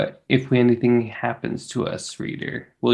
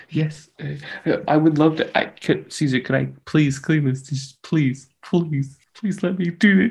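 pleading tone on the verge of tears; 4 semitones higher than usual. Acting out a character volunteering to clean dishes: teary pleading. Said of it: "tearing up".

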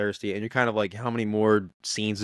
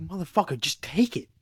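put-on angry yell, higher; 7 semitones higher than usual. Retelling how a movie character yelled at her to take medicine: imitating someone yelling. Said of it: "he was yelling at her like a dad".

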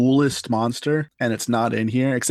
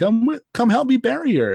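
mock chipper, cheery tone, higher; 12 semitones higher than usual. Retelling an audiobook reader's line for a character: imitating a chipper, cheery voice. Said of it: "he just sounds, like, chipper and cheery".

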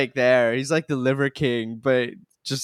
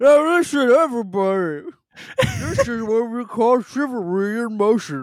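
put-on very high voice talking through a mouthful; 10 semitones higher than usual. Retelling a scene, the speaker imitates Ralph talking mouth-full of protein shake. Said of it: "his throat's mouth is full of protein shake".

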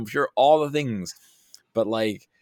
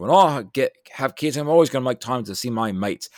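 deliberately bad put-on Australian accent; 2 semitones higher, 3 dB louder than usual. Quoting a friend from before he had kids, terrible Australian accent. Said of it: "I'm going to do a terrible Australian accent".

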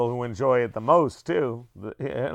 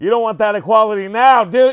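very loud, high, belted joking tone; 9 semitones higher, 10 dB louder than usual. Joking about equality: Adam Carolla voice. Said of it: "that's my Adam Carolla".

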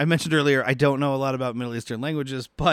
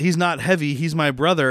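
plain

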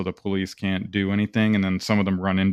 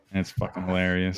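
normal talking voice

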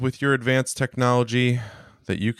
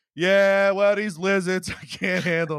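high, failed, bad, put-on Cleveland accent; 9 semitones higher than usual. Imagining a caller phoning in to local sports radio, in a failed Cleveland accent. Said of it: "I can't do a Cleveland accent".

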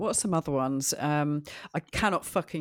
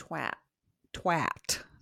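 attempted put-on American accent; 3 dB quieter than usual. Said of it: "you can't really say it in an American accent".

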